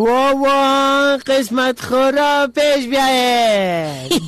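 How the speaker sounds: sing-song street vendor cry, like a bazaar hawker.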